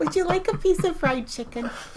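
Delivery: put-on very high-pitched little-old-lady voice. Asked what her grandma voice sounds like, the speaker demonstrates it: grandma voice. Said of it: "What does that sound like?".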